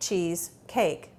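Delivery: "cheese cake" said slowly as two separate words.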